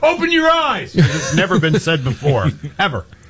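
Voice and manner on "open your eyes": high-pitched mock yell. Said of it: "I'm gonna tell this umpire".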